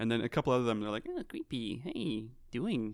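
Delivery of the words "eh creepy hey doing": slow, nasal put-on voice. Imitating a couple of the people being described, in a nasal voice. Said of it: "They have nasal voices".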